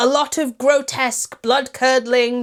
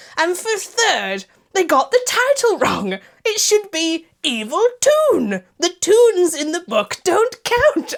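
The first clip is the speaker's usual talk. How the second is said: weird, pitched-up put-on voice; 6 semitones higher than usual. Reviewing a film and listing its flaws, in a weird put-on voice. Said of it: "I'm back in this weird voice again".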